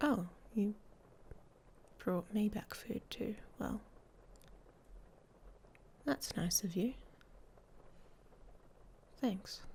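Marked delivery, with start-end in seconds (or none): 3.6-9.6 hushed, half-whispered, breathy, sarcastic-sounding delivery. Thanking someone for bringing food back: sounding sarcastic. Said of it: "that sounded sarcastic".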